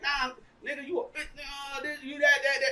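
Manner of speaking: mock frantic rant. Retelling how she kept mouthing off at him: imitating someone going crazy. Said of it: "And she going crazy".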